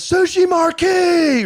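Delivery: put-on loud shout. Retelling how a bar patron jumped on the bar, retelling a loud shout. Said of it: "really loud".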